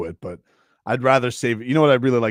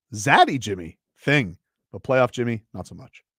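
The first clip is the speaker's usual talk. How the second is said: plain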